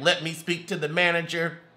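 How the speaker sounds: ordinary delivery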